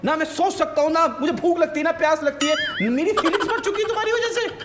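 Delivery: high-pitched, overplayed, mocking dramatic rant.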